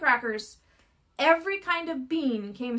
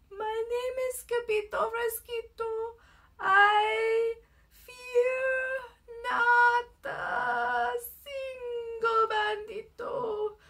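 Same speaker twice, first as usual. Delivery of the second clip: very soft, slow voice, "muy, muy" soft, "I" drawn out; 7 semitones higher than usual. Narrator reads a character's reply to the bandits: very soft voice. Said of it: "in a muy, muy soft voice he said".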